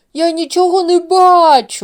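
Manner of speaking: very high, very loud roaring bellow, бачу stretched. A bear, with Uncle Sava landed on his head, cries out: roaring. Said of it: "заревів ведмідь".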